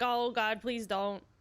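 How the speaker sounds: mock frightened, pleading voice. Voicing a game character who fears a kiss: imitating a scared character. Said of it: "he's scared she's gonna try to kiss him".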